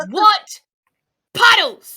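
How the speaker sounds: furious, very loud, very high, shrill. Voicing a character asking about puddles that aren't there: angry. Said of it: "And she just, like, is mad".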